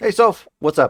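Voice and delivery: cheerful upbeat tone. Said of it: "You sound chipper".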